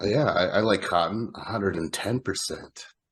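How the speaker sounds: ordinary delivery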